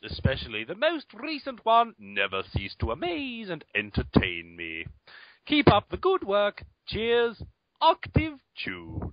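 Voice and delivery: very high, swooping, jumping between octaves. Reading out an email from a listener: reading in varying octaves. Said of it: "say the email in, uh, hopefully varying octaves".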